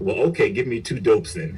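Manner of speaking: ordinary talk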